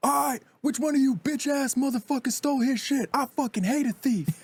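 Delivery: put-on enraged screaming outburst, very high pitch. Retelling how a man at the camp reacted to a theft: imitating someone screaming. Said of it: "He's, like, screaming".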